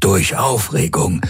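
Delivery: ordinary delivery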